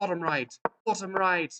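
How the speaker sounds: slight English accent. Talking through a chess checkmate in super fast motion, in an English accent. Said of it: "I don't know why we're developing an English accent".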